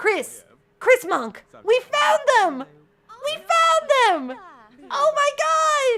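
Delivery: very high, very loud, thrilled excited shrieks. A streamer finally finding someone at the end of the stream, excited screaming. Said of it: "Sorry if I'm screaming too much".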